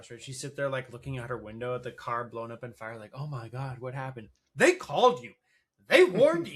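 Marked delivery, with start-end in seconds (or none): 3.1-6.6 very loud, rising, stunned, shocked disbelief. Imitating a film character watching the car burn: imitating her shocked surprise. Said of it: "why are you surprised?".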